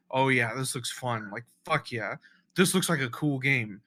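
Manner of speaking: ordinary talk, nothing marked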